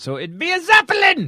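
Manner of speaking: very high, loud, yelled put-on German accent. Joking with co-hosts about a German character: German accent. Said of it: "so glad that you get to use your German accent".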